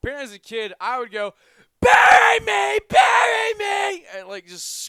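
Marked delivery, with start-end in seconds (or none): 1.8-4.0 put-on very loud, high, shrill, drawn-out child's scream. Recalling how they acted as a kid, imitating a child screaming. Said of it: "screaming at the top of my lungs".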